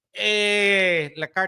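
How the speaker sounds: put-on Canadian accent. Repeating the phrase a la carte as a joke: put-on Canadian accent. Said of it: "let me do this as Canadian".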